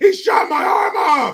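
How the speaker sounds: very high, shrill, shrieking yell. Imagining what a store plays when criminals walk in, imitating a yell. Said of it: "Why are you yelling like that?".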